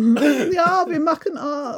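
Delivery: mock camp German-accented English. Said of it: "an accent of a German person speaking English without it sounding really camp".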